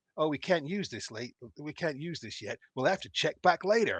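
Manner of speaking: put-on American teen bro voice. Describing a game demo's animated guide, retelling what he says: american teenage beach bro voice. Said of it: "he'll talk to you in this like beach bro voice".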